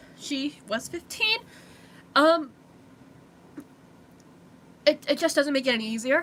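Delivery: trembling, unsteady voice. Talking to viewers in a video, voice shaking. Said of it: "my voice is shaking".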